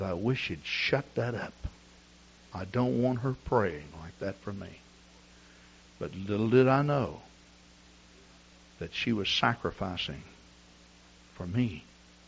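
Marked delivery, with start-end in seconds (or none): 0.0-4.8 put-on clenched-teeth mutter, lower and quieter. Retelling own past words about a mother praying, imitating muttering under breath. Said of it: "clench your teeth together and say under your breath".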